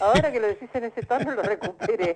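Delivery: rushed speech through laughter.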